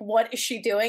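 normal talking voice

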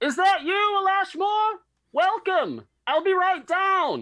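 very high, very loud call, as if from afar. Voicing a character calling from upstairs as the door opens: calling out from upstairs. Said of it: "a voice calls out from upstairs".

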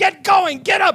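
shrill, very loud, high commanding officer scream. Retelling a commanding officer waking a sleeping recruit: imitating someone screaming. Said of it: "he begins screaming at him".

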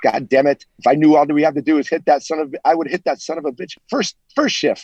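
put-on plain talking in a French accent. Retelling a remark made while skating off the ice, in Dennis Savard's French accent. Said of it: "Dennis Savard in his French accent goes".

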